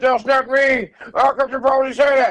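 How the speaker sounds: put-on very high, worked-up, excited outburst. Retelling a joke on a Joker lookalike, the speaker acts out his excited outburst. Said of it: "He got so excited like he was about to die".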